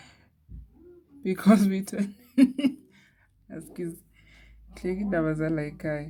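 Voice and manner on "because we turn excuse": laughing through the words, breaking into laughter mid-sentence. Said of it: "I'm just laughing".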